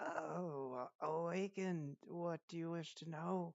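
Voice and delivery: muffled, muted, slow, high-pitched voice. A game master voicing something speaking from within a coffin, muffled voice from a coffin. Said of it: "you hear a muffled voice".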